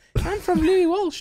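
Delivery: high-pitched Irish voice.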